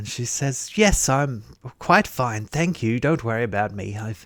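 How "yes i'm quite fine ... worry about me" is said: words spoken through a smile. Voicing a begging woman greeting a player: smiling voice. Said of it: "Her voice as she greets you betrays the sound of smiling".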